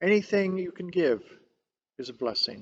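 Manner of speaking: clear, plain, simple voice. Voicing a third person from past generations on giving: quiet and clear voice. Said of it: "quiet and clear".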